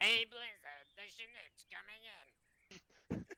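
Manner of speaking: very high, loud, throat-straining voice. Acting out what the JTAC might say, in a best attempt: imitating Muscat's voice. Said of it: "and do my best Muscat voice".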